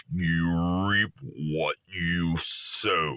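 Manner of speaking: put-on very low, old-world mystic voice, intoning. Speaker repeats the line he wants to bring up, in a Lord of the Rings mystic voice. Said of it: "ancient time, mystic voice".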